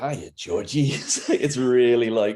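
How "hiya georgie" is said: put-on creepy tone in a thick Brooklyn accent. Describing how Tim Curry sounded as Pennywise: creepy Brooklyn voice. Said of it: "he also just sounds like this really creepy Brooklyn".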